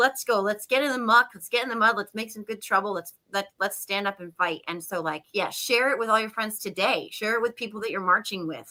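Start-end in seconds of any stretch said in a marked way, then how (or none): none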